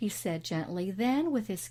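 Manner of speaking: plain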